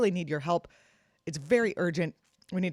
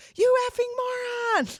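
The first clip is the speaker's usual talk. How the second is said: mock shrill, very high little child's shout; 6 dB louder than usual. Retelling a daughter yelling from the back seat, imitating a child yelling. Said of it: "My daughter from the back seat yells".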